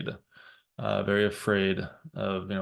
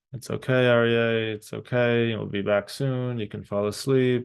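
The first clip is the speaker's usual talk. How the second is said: calm, gentle, soothing, comforting, coaxing tone; 3 semitones higher, 4 dB louder than usual. Speaker retells calming Aryeh, crying from tiredness right behind them; retelling gentle soothing words. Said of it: "I'm kind of gently saying".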